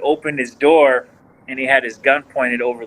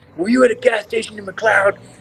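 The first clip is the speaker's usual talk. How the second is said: acted, high, barking, yelling police voice; 8 semitones higher than usual. Retelling an arrest, quoting the officer: imitating an officer yelling. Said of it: "he starts yelling".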